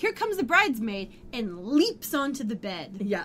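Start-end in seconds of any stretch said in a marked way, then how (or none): 0.0-1.1 put-on, high-pitched, fast shouted yell. Recapping a scene, the speaker acts out a character yelling, retelling a yell. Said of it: "Phoebe yells out".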